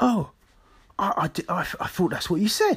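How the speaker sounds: put-on whisper. Recounting a man's quiet retraction, retelling someone whispering. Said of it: "just whispers".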